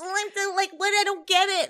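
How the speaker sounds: very high, pitched way up, playing-dumb voice. Describing how Schwartz always acts: imitating Schwartz acting clueless. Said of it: "That is him. He always acts like that".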